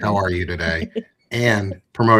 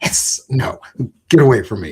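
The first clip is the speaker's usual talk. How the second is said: put-on grumpy, irritable snake voice; 4 semitones higher, 4 dB louder than usual. Retelling how the snake reacted during cage cleaning: imitating an unhappy snake. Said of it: "he was not happy".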